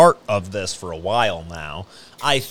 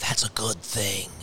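strange, barely audible whisper, very quiet; 3 semitones lower, 9 dB quieter than usual. Retell his answer to the complaint that workers would rather stay home, imitating a weird whisper. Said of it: "in a weird whisper".

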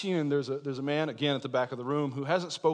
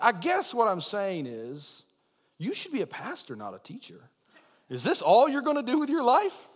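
exaggerated Georgia Southern drawl with swooping pitch; 7 semitones higher than usual. Retelling what a man at the back of class said: Georgia drawl. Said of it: "almost caricatured Georgia drawl".

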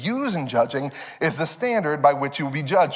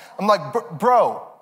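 usual speaking voice

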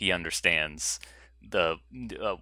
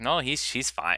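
put-on terrible, clumsy Mexican accent, pitched up; 7 semitones higher than usual. Quoting a mexican rancher character defending his wife: terrible mexican accent. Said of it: "that's the terrible Mexican accent he had".

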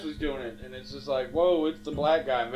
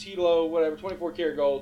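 normal talking voice

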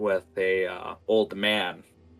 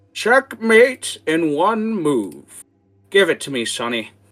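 put-on very high, very loud, swooping shrill old-man voice; 9 semitones higher, 9 dB louder than usual. Voicing an old man setting up chess for the player: old man character voice. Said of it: "looks at you and just goes".

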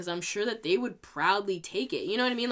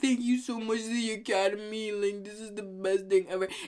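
put-on tearful voice.

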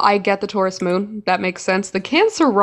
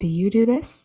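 put-on whispery voice; 4 dB quieter than usual. Imitating another speaker close to the mic: imitating someone's whispery voice. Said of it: "it's that whispery thing".

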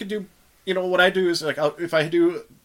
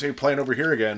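normal talking voice

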